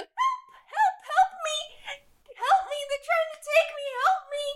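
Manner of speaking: put-on very high-pitched, rushed, tiny little-girl pleading voice. Storyteller voicing a character calling out to bystanders, Candlefoot's small-girl voice. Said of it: "Now sounds like a small girl".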